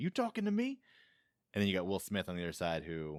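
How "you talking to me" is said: put-on combative, high-pitched Jersey tough-guy accent. Describing a cartoon pigeon voiced like Joe Pesci, the speaker does a Joe Pesci Jersey accent. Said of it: "like a Jersey accent".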